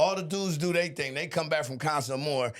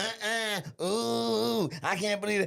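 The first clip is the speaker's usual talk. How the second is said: high, slow, long stretched-out ooh; 6 semitones higher than usual. Mocking the women on a reality show: imitating women on Love Island. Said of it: "all the women like".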